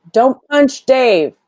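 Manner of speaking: very high, loud shouted call in character voice. Voicing a character who yells at another not to punch. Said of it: "Finn is gonna yell".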